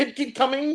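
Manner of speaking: very high-pitched, fake, put-on Chinese accent. Answering the other speaker's question about the phrase, in a put-on Chinese accent. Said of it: "Chinese accent".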